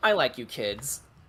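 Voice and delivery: amused line spoken while chuckling through the words. Voicing Elizabeth, who chuckles at a joke: chuckling while speaking. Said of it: "Elizabeth chuckles and says".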